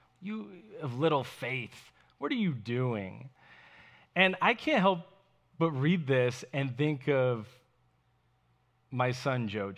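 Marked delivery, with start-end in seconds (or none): 0.2-3.3 mock reproachful tone with open disgust, acted out. Voicing a rebuke from the passage being discussed, mock scolding in disgust. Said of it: "Like he's scolding him. Ah, in disgust".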